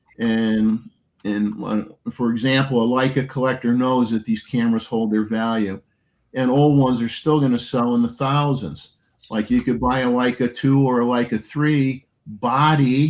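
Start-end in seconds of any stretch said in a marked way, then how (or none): 12.3-13.1 strong stress on the word 'body'. Explaining what old Leica cameras sell for, stressing the word 'body'. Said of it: "I stress the word just the body".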